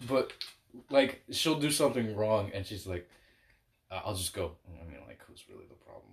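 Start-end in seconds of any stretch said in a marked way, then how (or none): 4.7-6.1 fast, whispered, grumbling mutter under the breath. Complaining about how someone acts, muttered under breath. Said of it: "I talk so much shit under my breath".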